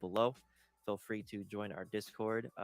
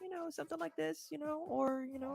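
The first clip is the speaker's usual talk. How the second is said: raised, higher-pitched put-on voice. Showing how they might voice women in side stories: higher pitched voice. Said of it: "a higher pitched voice".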